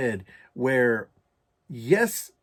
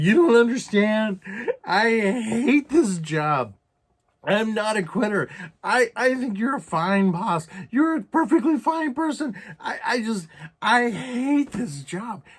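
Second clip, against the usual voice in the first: mock sobbing, choking up, much higher, slower; 9 semitones higher, 4 dB louder than usual. Recalling telling a boss about hating the job, the speaker retells choking on tears. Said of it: "I was like choking".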